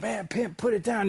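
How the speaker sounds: mock very high hollering yell. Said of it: "he's yelling".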